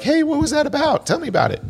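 horrible, very high, swooping wifely voice. Acting out a wife asking about a movie: horrible Natalie impersonation. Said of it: "that was a horrible Natalie impersonation".

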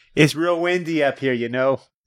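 put-on strong Chicago accent.

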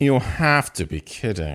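mock British man voice. Reading a British character's line in a phone scene: British guy voice. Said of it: "British guy, so I'll, I'll, I'll say".

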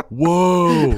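whoa stretched out, high and loud. Reacting to a movie scene: Nicolas Cage impression. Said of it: "That's a pretty good, uh, Nicolas Cage".

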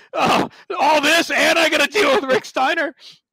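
exasperated dad voice.

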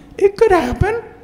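mock tiny sorrowful voice, very high pitched. Acting out a little inner voice in the head: imitating a very quiet sad voice. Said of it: "It was very quiet and very sad".

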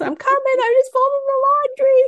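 put-on very high yelling call. Telling a story about coming upstairs from the basement with laundry, retelling a yell. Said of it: "I'm like yelling up".

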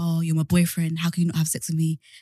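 put-on pushy, pressuring, insistent tone. Retelling what a boyfriend kept saying: imitating a pressuring boyfriend. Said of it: "he was like".

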